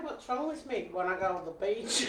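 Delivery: poor, fake put-on Australian accent. Told she can't do an Australian accent, trying again: bad Australian accent. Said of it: "you can't do an Australian accent".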